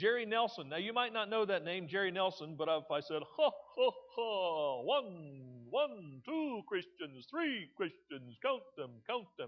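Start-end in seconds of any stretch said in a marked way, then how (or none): 3.4-9.5 slow, with one stretched out. Reminding listeners whose voice Jerry Nelson did, speak in the Count from Sesame Street voice. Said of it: "Jerry Nelson was the voice of the Count".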